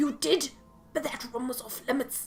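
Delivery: put-on speaking with Scottish accent. Player voicing a character told someone looked in Paolo's room: Scottish accent. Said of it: "This guy's Scottish accent".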